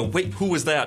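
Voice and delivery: ordinary talk, nothing marked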